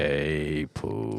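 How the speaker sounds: very low, hushed, soft voice, "hey" long-stretched. Correcting another's Eeyore, doing it lower: lower Eeyore voice. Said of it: "He's a little lower than that".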